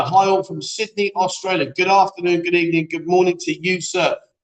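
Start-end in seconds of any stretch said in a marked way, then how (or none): none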